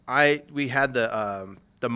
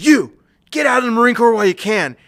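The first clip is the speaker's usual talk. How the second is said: put-on scream, higher and louder; 11 semitones higher, 8 dB louder than usual. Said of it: "he's kicking and screaming".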